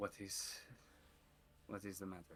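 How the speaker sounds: quiet, low, kept-down murmur. Standing out of view of the window, speaking to the other character: low voice. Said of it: "I will keep a low voice".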